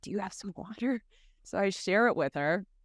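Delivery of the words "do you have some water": soft, hushed whisper, barely audible. Retelling a thirsty woman's question on a silent night march: imitating a whisper. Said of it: "she was, like, whispering".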